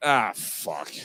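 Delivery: abrupt swear, suddenly blurted, cut off mid-sentence. Retelling what a guy in a sound clip said mid-sentence: imitating a guy in a clip cursing. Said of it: "he was mid-sentence and he went".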